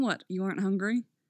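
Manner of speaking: ordinary delivery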